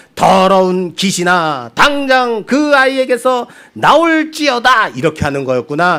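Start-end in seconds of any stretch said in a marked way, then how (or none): 0.2-4.9 put-on high, charismatic, commanding call. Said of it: "톤까지 흉내내면서".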